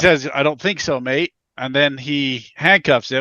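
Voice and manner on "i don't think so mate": put-on poorly done, terrible Australian accent. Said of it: "that was Australian. That was terrible".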